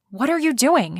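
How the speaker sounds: hissed quietly under the breath. Narrator reading a woman's question to a man at the sink as she passes, hissed. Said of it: "she hissed as she walked by".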